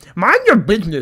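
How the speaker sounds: loud, high voice, words forced through mouthful of plastic. Retelling own reply to two women, imitating talking with a mouthful of plastic. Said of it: "I had a mouthful of plastic".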